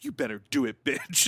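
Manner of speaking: hyped-up, energetic, cheerleading pep talk tone. Retelling rushing to leave the house: imitating hyping self up. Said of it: "I often hype myself up".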